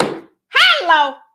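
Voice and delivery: all-out loud, high-pitched scream. Reacting to a quote that was powerful: screaming. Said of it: "I know I just screamed in somebody's ear".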